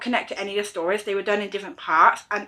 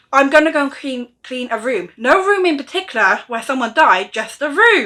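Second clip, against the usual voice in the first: loud, raised voice for everyone to hear; 4 semitones higher, 6 dB louder than usual. Reviewing a book, retelling Molly's line after she was told to hush: imitating Molly saying it loudly. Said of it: "And then she says really loudly".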